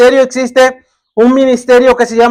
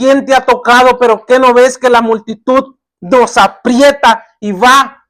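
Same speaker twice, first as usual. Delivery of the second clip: plain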